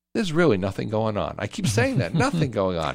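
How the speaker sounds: heavily sarcastic, tongue-in-cheek, swooping delivery. Radio host to his guest Peter about the year in review, sarcastic. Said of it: "I'm being sarcastic".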